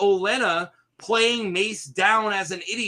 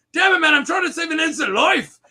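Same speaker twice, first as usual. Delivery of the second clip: put-on Scottish accent, higher and louder; 8 semitones higher, 5 dB louder than usual. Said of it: "Scottish at the end".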